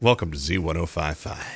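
radio announcer style voice. Taking part in a radio voice showdown, doing a radio voice. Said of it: "it was a radio voice showdown there".

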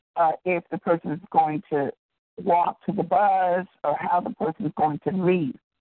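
normal talking voice

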